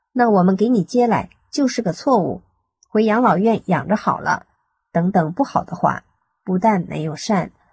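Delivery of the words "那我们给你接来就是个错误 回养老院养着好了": usual speaking voice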